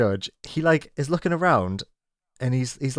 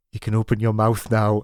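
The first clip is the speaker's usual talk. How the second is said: whispered delivery; 3 semitones lower than usual. Retelling how production assistants spoke while feeding blindfolded contestants: imitating someone whispering.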